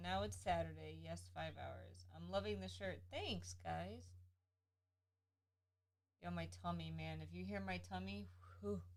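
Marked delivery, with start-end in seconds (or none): none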